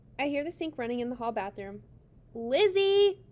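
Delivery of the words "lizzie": very loud, high-pitched call. The narrator calls to Lizzie through the closed bathroom door: calling loudly. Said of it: "I call loudly through the closed bathroom door".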